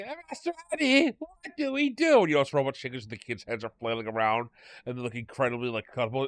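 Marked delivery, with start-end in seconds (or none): 0.0-2.2 very high, pitched-way-up, stressed-out voice. Retelling a comedy sketch in which Anakin asks for help: stressed Anakin voice. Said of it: "really stressed that everybody keeps putting all this pressure on him".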